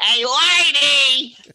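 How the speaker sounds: loud shouted character voice. Pressed by the others to do the voice, the speaker obliges in a loud put-on voice. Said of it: "I apologize to anybody who was wearing earbuds".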